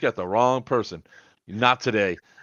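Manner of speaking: normal talking voice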